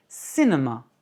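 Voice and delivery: cinema with stress on first syllable cin-. Explaining word stress with examples, first up: stress on first syllable of cinema. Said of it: "accent sur la première".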